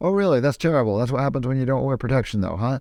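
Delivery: normal talking voice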